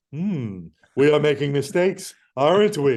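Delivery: swooping, clever-sounding cartoon dinosaur voice. Recalling a genius talking dinosaur, the speaker imitates that dinosaur's voice. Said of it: "he spoke with that voice like".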